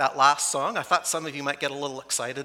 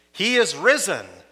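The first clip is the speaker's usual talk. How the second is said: slightly louder voice; 5 semitones higher, 6 dB louder than usual. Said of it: "you're gonna do it a little louder".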